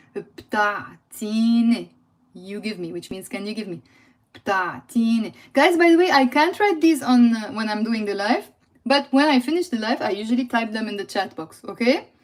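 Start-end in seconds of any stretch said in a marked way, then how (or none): 0.1-1.8 slow careful pronunciation, lower pitch. Teaching a phrase in a live lesson, saying it slowly. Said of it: "Let's say slowly".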